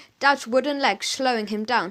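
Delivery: ordinary delivery, nothing marked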